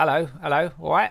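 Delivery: mock Cockney geezer accent. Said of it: "Cockney geezers, like".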